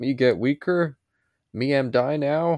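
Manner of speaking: slow, slightly high, dopey, simple-minded caveman voice. Retelling a story where Superman grows weak and simple-minded; simple-minded Superman voice. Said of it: "he becomes so simple minded, and he's like".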